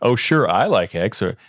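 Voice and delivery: ordinary talk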